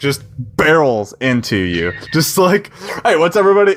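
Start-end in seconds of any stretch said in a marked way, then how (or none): 3.0-3.8 very high, loud, rowdy voice. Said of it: "makes a commotion".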